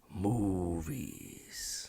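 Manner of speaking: deep, very quiet, barely audible, dragged-out word. Show how he pronounced that word for way too long, in a drawn-out Dom Toretto voice. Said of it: "He he dragged it out for way too long too... he was doing it in Dom Toretto character".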